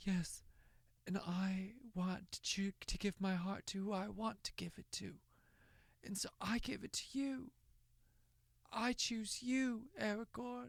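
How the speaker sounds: soft, high, odd little delivery. Complaining about how she delivers lines, mocking her weird little delivery. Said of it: "in this weird little delivery".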